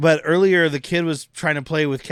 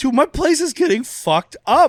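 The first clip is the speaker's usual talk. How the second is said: mock very high, loud outburst, torn between dismay and thrill; 12 semitones higher, 5 dB louder than usual. Retelling a film scene where Dietrich's place is destroyed: imitating Dietrich, sad yet excited. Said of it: "Dietrich is like".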